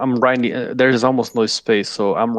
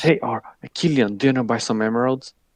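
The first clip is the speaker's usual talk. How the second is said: shady, sketchy drug dealer tone; 4 dB quieter than usual. A player offering to sell emeralds to another character, like a shady drug dealer. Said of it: "You just sound like you're selling her drugs".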